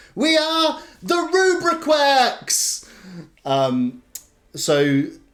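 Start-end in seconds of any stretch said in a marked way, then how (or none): 0.2-2.9 very high heroic cry, voices in unison. Voicing two characters announcing their group name together: crying out in unison. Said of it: "yet cry in unison".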